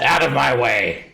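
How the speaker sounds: loud, high, drawn-out yell at full power. Voicing a Githyanki warrior who chases the group: yelling. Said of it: "he just sort of yells at you all he can".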